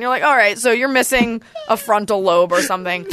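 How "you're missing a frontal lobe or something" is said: normal talking voice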